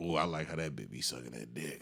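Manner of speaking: put-on freaky old-head voice. Describing what one side of a split screen shows: freaky old-head voice.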